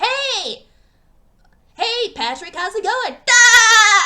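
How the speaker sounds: loud, slow, belted cartoon voice, "Da" drawn out. Showing off a better voice than Tom Kenny: SpongeBob voice. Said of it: "I do a better voice for SpongeBob".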